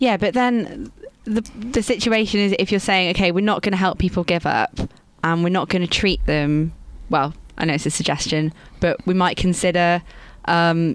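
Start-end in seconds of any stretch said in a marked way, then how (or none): none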